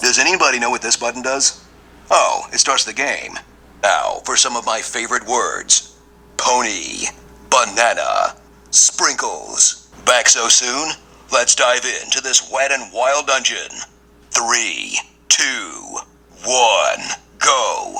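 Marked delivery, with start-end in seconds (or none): 3.8-18.0 deep, bassy, swooping movie-trailer announcer voice. Quoting what the game's announcer says as the game starts: deep, bassy movie-trailer voice. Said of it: "deep, bassy, movie trailer type voice".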